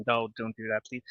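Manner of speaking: usual speaking voice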